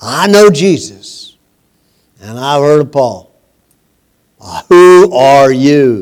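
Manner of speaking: put-on mean, nasty demon voice. Speaker retells the evil spirit answering the men: put-on mean, nasty spirit voice. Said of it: "probably a mean, nasty voice".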